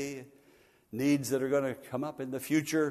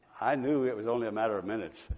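ordinary talk

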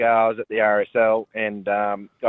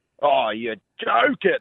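mock loud, blurted-out exclamation; 4 semitones higher than usual. Speaker retells reacting while about to eat a roast dinner, retelling a loud outburst. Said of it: "I've just gone really loudly".

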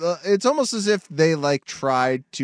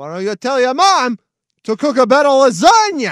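loud, very high put-on Italian New York accent; 9 semitones higher, 7 dB louder than usual. Asked what accent is being done, going for a put-on Italian accent. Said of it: "It's very Italian".

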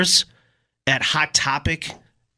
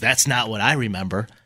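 imitated, uncomfortable, awkward chuckle, lower pitched; 5 semitones lower, 4 dB quieter than usual. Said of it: "gives this uncomfortable chuckle and says".

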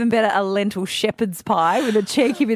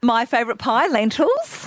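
tune climbing excitedly upward on "lentils"; 3 semitones higher than usual. Repeating a co-host's words back to them: mimicking an upward inflection. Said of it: "Listen to the upward inflection when you say it again".

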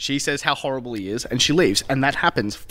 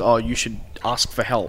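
normal talking voice

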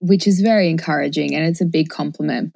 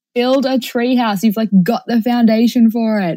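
mock high-pitched yelling; 6 semitones higher, 4 dB louder than usual. Retelling watching a team on TV: imitating own yelling at the TV. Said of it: "I was literally yelling at the T V".

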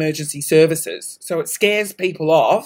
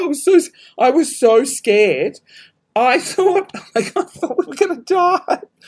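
crying with laughter, higher; 9 semitones higher than usual. Retelling a scary plane takeoff, laughing to tears.

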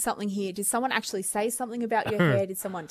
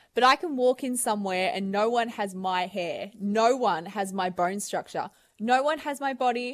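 usual speaking voice

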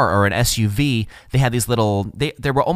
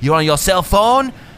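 light put-on French accent, pitched up; 7 semitones higher, 4 dB louder than usual. Retelling the police officer questioning the speaker: little French accent. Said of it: "walks up with his little French accent".

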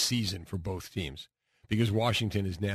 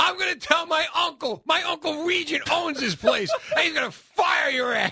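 very high, loud shrieking scream; 7 dB louder than usual. Retelling being thrown out of a diner, the speaker reenacts it: retelling a scream. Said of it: "And I'm screaming".

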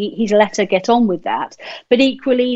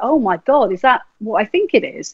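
acted, blurted outburst of surprise. Retelling first seeing someone's ring, retelling a surprised blurt. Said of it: "I just blurted out when I saw it".

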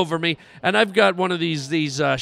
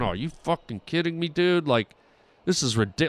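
put-on mutter under breath, lower, quieter, faster; 2 semitones lower, 5 dB quieter than usual. Recounting being irritated by a fan, retelling muttering under breath. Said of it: "I'm like under my breath".

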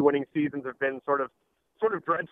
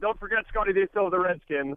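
ordinary talk

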